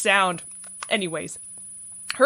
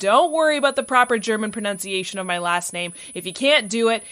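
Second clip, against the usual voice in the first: ordinary delivery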